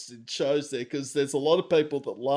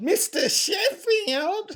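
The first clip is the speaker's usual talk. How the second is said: clumsy, much higher pitch. Showing the other speaker a bad Fran Drescher impression. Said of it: "a really bad impersonation of Fran Fon".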